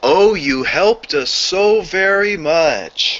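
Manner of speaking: overdone, exaggerated delivery. Acting a scripted scene, answering the helper in an over-exaggerated voice. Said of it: "in an over-exaggerated voice".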